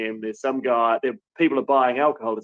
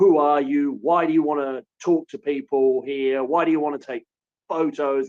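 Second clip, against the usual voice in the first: put-on man's voice, yelling in rapid demanding bursts; 3 semitones higher than usual. Retelling a man yelling questions at the journalists: imitating a man yelling. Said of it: "he keeps on like yelling".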